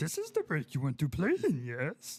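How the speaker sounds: loud, swooping character voice with sweeping pitch. Repeating a line for another speaker, doing a Yoda voice. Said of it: "That's a pretty good Yoda".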